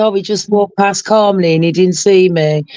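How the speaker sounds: ordinary delivery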